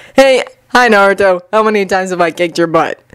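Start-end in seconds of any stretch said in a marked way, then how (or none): none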